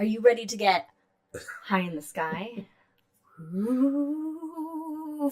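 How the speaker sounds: eerie, spooky voice with drawn-out ooh. Introducing the month's constellation highlight: spooky voice. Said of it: "it's my spooky voice".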